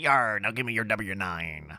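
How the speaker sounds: little cartoon pirate voice, put on. Imagining a chatbot asking for a w-9, in a pirate voice. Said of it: "in like a pirate voice".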